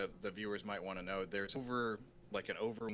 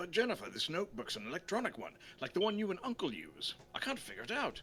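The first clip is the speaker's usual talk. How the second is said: daft put-on voice, high and swooping; 8 semitones higher than usual. Speaking to Jennifer as a character in a story scene, in a stupid voice. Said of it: "I'm doing stupid voices".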